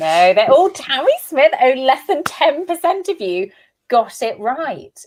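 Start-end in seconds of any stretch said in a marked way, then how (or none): 1.6-4.9 thrilled, delighted, gleeful and excited delivery. Host telling listeners the quiz result, excited. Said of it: "You sound so excited that you trick people".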